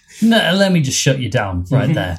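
ordinary talk, nothing marked

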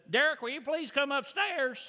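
put-on Arkansas twang, called out high.

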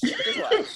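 teasing singsong delivery.

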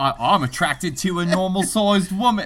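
put-on British accent. Mocking Robbie Tripp's words, the speaker does Robbie Tripp in a British accent. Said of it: "Why are we doing the British accent?".

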